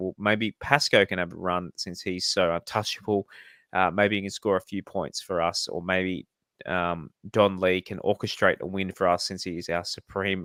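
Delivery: ordinary delivery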